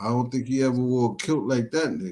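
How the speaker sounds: ordinary delivery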